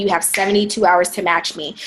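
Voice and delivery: plain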